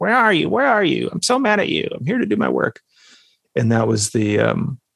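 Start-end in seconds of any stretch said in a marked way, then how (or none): 0.0-2.8 acted very high, fast, swooping, whiny complaining tone. Recalling a ceremony moment, the speaker retells their own whining. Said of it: "just like whining at the feminine".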